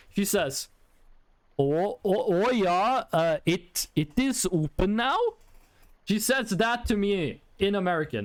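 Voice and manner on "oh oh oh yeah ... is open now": put-on slow, heavy, laid-on Swedish accent. Retelling what a cashier said to the speaker, in very Swedish-accented English. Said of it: "in a very Swedish dialect of English. I'm gonna try to replicate it".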